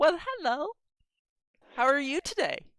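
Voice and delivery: put-on very high-pitched baby talk voice. Speaker shows how he talks to a dwarf: talking like to a toddler. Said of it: "I talk to them like I'm talking to a toddler".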